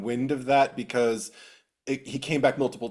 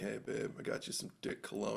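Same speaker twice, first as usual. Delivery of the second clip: soft, breathy, hushed whisper close to the ear; 3 semitones lower, 15 dB quieter than usual. Acting out a boyfriend during a kiss: whispering in your ear. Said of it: "he just kinda whispers in your ear like".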